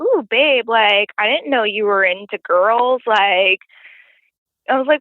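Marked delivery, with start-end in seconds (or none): 0.0-3.0 playful, flirty, teasing voice. Retelling a woman's sudden joke to the speaker, mock-flirty voice. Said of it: "like in a flirty voice".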